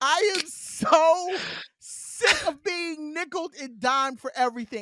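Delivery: high, all-out shouting rant close into the mic. Venting to listeners while speaking into the mic, yelling into the mic. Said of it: "I know I'm yelling into the mic".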